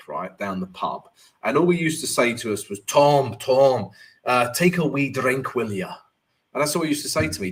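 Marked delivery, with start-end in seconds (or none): 2.8-5.9 slow, drawn-out put-on Scottish accent. Quoting what a man at the pub used to say to him, Scottish accent. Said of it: "So that is my Scottish accent".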